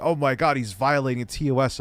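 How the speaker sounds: plain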